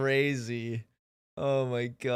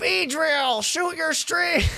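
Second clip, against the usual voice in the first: anime-style voice, much higher pitch; 5 dB louder than usual. Streamer doing a bit for viewers, Pokémon anime bug catcher impression. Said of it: "my Pokemon anime impression".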